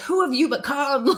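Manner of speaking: high, enraged screaming cry. Recalling screaming at a partner who kept asking questions, retelling screaming at someone. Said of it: "I remember like screaming at him".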